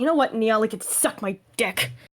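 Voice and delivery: quiet private mutter under the breath. Picking up a companion to steady him, muttering under breath. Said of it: "I'm just saying under my breath".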